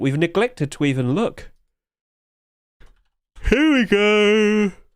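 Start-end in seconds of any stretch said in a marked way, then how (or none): 3.5-4.7 yawning, high and drawn out, "go" stretched long. Checking how a Twitch Rivals trophy is doing on the Steam market, yawning. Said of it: "Sorry for yawning".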